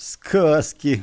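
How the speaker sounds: scornful, contemptuous snort, scoffing. Igor scoffs at the boys for making up stories, scornful snort. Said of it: "презрительно фыркнул Игорь".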